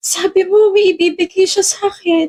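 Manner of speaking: slow, tearful speech while crying. Answering after being asked why she is crying: crying while talking. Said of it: "bakit ka umiiyak?".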